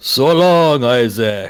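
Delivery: loud, projected phantom voice with one word drawn out long. Casting an illusion that calls out to Isaac in Strahd's voice. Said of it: "I'm gonna use Strahd's voice coming out of this phantasm".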